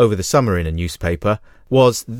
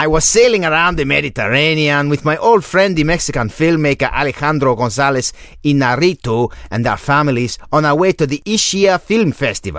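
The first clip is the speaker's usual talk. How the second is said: exaggerated, overdone Mexican accent, pitched higher; 5 semitones higher than usual. Reading out Cuarón's words to a co-speaker who asked for an accent, in a grotesque caricature Cuarón accent. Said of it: "Why don't you just read it out in a normal".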